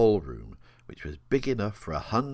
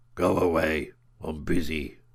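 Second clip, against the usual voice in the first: gruff, rough voice; 4 dB louder than usual. Narrator reading a voice behind a door answering a knock, gruff voice. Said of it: "a gruff voice from the other side said".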